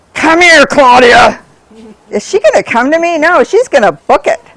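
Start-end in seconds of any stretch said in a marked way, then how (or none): 0.1-1.4 harsh, loud, scolding, mean call. Showing dog handlers how not to call a dog: demonstrating a mean voice. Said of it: "please don't use your mean voice".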